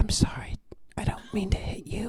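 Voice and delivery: whispering quietly. Playing Frankie, apologizing to a wall before punching it: whispering to the wall. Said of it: "Frankie is going to just whisper into the wall".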